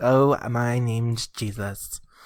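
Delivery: very slow, drawn-out, prissy voice. Imitating overdubbed old movies that made Jesus sound prissy: prissy-sounding Jesus voice. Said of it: "prissy sounding".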